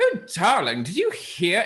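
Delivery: very loud, carrying, swooping announcing voice. A disguised character in a tavern speaking so everyone can hear, very loud. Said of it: "saying it very loudly so everyone in the tavern can hear".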